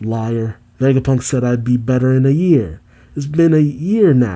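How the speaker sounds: ordinary talk, nothing marked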